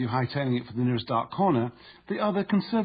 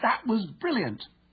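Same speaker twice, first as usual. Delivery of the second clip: thrilled, very high-pitched excited exclamation; 10 semitones higher than usual. Demonstrating tone as someone praising a fantastic goal, excited. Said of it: "heard to say with excitement".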